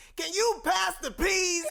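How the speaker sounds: high, slow, drawn-out, showy stand-up comic voice. Mocking a comedian's stage voice at the dinner table: bad Chris Rock impression. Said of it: "a bad Chris Rock impression".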